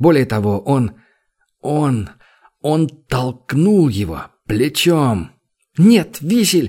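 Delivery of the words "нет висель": sudden, scared, frightened cry, pitched high. A woman stopping her companion from shoving a man, crying out in fright. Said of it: "испуганно вскрикнула Тера".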